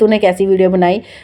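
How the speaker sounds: normal talking voice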